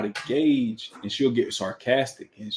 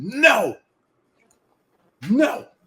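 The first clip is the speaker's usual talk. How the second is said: put-on curt snapping "no", higher; 12 semitones higher, 4 dB louder than usual. Retelling how the wife answers a child asking at a bad time: imitating the wife snapping no. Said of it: "that was impersonation you?".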